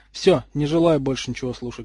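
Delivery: plain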